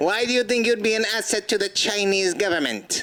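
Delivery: high mock Chinese accent through laughter. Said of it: "Do I have to do the accent too?".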